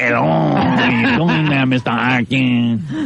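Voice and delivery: really bad put-on Mexican accent, slow. Asked to do the accent for a Mexican role, trying a bad Mexican accent. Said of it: "Like one of those really bad".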